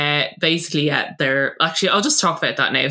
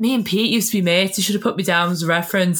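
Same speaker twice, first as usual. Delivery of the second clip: really sad, mournful, downcast, sorry-sounding voice; 4 semitones higher than usual. Retelling what Lisa said to Nikki: imitating Lisa sounding sad. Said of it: "really sad".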